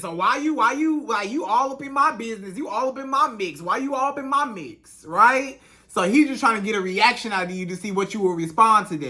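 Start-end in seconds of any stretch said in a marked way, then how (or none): 0.1-5.0 put-on sarcastic voice. Acting out a man's reply on a phone call: imitating a sarcastic man. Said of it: "when this man just sarcastic with you".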